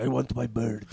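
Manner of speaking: put-on speech in a Russian accent. Naming the impression from Iron Man Two: Mickey Rourke's Russian accent. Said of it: "the one I was hitting was from, uh, Iron Man Two".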